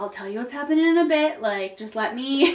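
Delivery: real composed, controlled, even, reassuring calm. Imitating a partner's phone call after first moving here: real calm voice. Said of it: "real calm".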